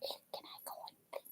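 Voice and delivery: whispered put-on dog voice. Retelling how the dog asks to come onto the bed: voicing the dog. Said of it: "He'll put one paw up, up here going".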